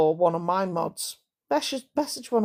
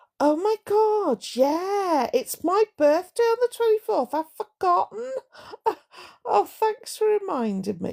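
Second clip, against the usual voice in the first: very high, feigned forgetful tone; 11 semitones higher than usual. Advising viewers how to mention a birthday: saying it as if you've forgotten. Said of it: "you need to say it like you've forgotten".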